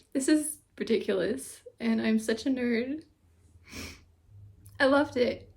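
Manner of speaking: tearful, overjoyed, gushing happy crying. A fan gushing about a show they loved, crying with happiness. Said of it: "I'm like actually crying with happiness right now".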